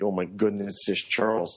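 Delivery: ordinary talk, nothing marked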